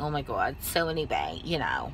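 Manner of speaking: put-on New Jersey accent in loose chatter. Chatting with a friend in the car while he drives, in a put-on New Jersey accent. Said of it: "put our New Jersey accent on".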